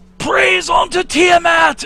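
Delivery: shouting. Narrating a game, voicing a woman who throws her spear into the air, yelling. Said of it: "And then she yells".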